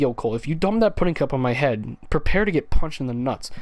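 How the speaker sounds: ordinary delivery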